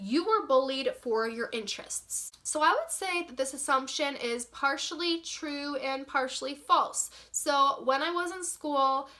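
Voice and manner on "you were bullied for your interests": ordinary talk, nothing marked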